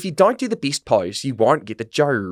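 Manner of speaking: put-on Australian accent. Quoting a judge from Australia's Next Top Model: imitating an Australian judge's accent. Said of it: "he just took that accent".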